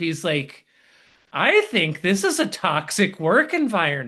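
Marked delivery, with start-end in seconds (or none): 1.3-4.1 plain, deliberate, pointed delivery. Retelling a friend's remark aimed at the coach: imitating someone saying it loud. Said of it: "he said it really loud on purpose".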